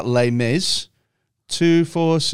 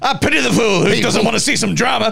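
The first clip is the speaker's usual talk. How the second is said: weird, half-committed, rough, raspy, pitched-up voice; 8 semitones higher than usual. Joking about a musical, in a weird Mister T half voice. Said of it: "that weird Mister T sort of half voice".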